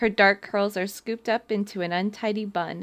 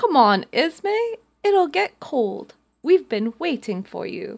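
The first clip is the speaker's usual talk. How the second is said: bad put-on British accent, sing-song, loud and slow; 6 semitones higher, 5 dB louder than usual. Reading a scripted line aloud to another character: awful British accent. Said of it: "That was an awful British accent".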